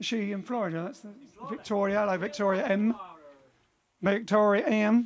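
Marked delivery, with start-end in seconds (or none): 4.0-5.1 bad, fake put-on American accent. Repeating a name for someone, in a bad American accent. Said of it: "That's my bad American accent".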